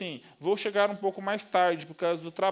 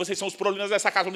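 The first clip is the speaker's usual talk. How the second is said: nonstop, rapid football-commentator play-by-play rush. Imitating someone who talks like a football narrator, very fast, sportscaster-style. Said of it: "fala acelerada ... um narrador de futebol".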